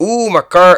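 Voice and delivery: very loud, high-pitched attempted Canadian accent. Imagining what a Canadian man whose car was stolen said, attempted Canadian accent. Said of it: "what does a Canadian sound like?".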